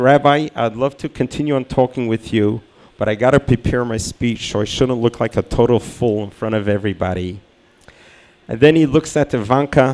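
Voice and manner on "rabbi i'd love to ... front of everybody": ordinary talk, nothing marked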